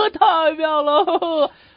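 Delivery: acted out, high-pitched, words broken up by laughter. Retelling what he said once his hat was put back, imitating laughing while talking. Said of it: "一边笑一边说".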